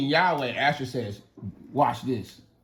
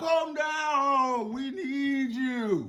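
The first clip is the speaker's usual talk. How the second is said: acted very high pleading wail, drawn out, falling; 12 semitones higher, 4 dB quieter than usual. Retelling a Bible story, imitating a crowd screaming for Baal. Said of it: "And they're screaming for Baal".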